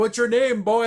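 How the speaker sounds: really loud, high-pitched shout. Retelling a man addressing a driver who can't hear, imitating a loud shout. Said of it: "So like he says it real loud".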